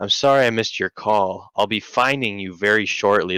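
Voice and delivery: eerie, unsettling, creepy crime-show voice. Retelling a voicemail greeting heard on a call: imitating a creepy voice. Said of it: "it's this creepy ass voice talking".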